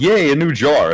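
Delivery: high, delighted, cheery little yay. Retelling how the other reacted to a jar promotion, mock cheering. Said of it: "you were like".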